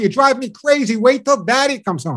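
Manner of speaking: yelling, high pitched. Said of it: "starts yelling at the dog".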